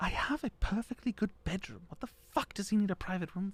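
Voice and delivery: mumbled, muttered under the breath. Voicing a character overheard complaining about a private room: mumbling under her breath. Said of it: "You hear her mumble under her breath".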